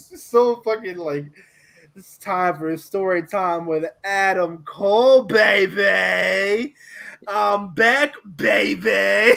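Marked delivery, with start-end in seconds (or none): 1.9-9.4 put-on very slow, drawn-out baby voice. Imitating how a wrestler says baby in promos: Adam Cole impression. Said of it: "the way he says "baby"".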